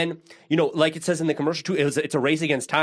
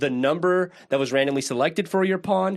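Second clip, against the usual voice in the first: usual speaking voice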